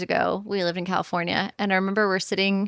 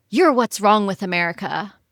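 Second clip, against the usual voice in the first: mock outburst, voice suddenly raised; 4 dB louder than usual. Retelling what a stranger in a bar said: imitating a man raising his voice. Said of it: "raised his voice and goes".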